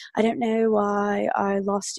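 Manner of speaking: put-on British accent. Retelling what Dave said after the breakup: Dave in a British accent. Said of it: "Do you like my British accent?".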